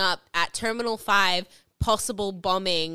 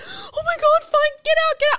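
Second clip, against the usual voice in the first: mock very high, loud, frantic, tearful panicked crying; 7 dB louder than usual. Retelling a phone call during an airport lockdown, she quotes her mother: imitating mom's panicked crying. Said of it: "she's crying she's panicking she's like".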